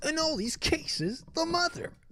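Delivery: indignant, outraged talk-radio voice, very high and soft. Podcaster repeating an earlier phrase of their own in an outrage radio voice. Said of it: "Do you like my outrage radio voice?".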